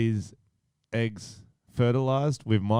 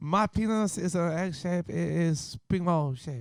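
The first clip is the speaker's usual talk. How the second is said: put-on Chinese accent, high, kept up; 7 semitones higher, 3 dB quieter than usual. On a comedy podcast, playing a co-host from China, in a mock Chinese accent. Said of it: "speaking an accent for the whole time".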